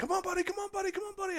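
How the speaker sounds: very high, rapid-fire, excited cheering yell. Retelling cheering on their dog swimming in the river, retelling yelling encouragement. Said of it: "I start yelling, you know, encouragement".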